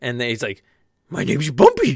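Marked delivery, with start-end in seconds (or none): 1.1-2.0 put-on cartoon dog voice. Imagining a show character who sounds like Scooby-Doo: Scooby-Doo voice. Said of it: "he just sounds like Scooby-Doo".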